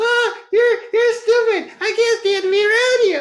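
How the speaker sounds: very high, loud, squeaky cartoon voice. Showing a group the same words in Minnie Mouse's voice, high squeaky Minnie Mouse voice. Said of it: "I'm like real high and squeaky".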